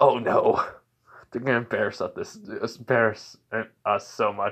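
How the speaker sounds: ordinary delivery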